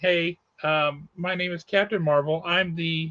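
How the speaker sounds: plain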